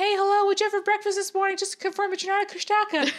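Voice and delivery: very high, chatty, over-talking helper elf voice. Acting out asking someone to prove they're not a kushtaka: Inara voice. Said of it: "I liked your Inara voice there".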